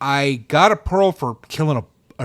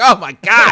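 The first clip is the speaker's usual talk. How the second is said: mock, high, loud, freaked-out, rushed panic; 5 semitones higher, 6 dB louder than usual. Retelling panicking while running out of time before recording: imitating own past panic. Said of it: "I was freaking out, like".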